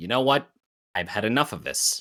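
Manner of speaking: ordinary talk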